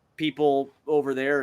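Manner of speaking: usual speaking voice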